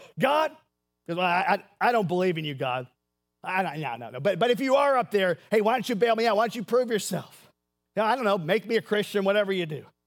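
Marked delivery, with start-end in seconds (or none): 0.2-7.4 put-on terrified cry, drawn out. Telling a joke about an atheist facing a bear, retelling a terrified cry. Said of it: "he cries out".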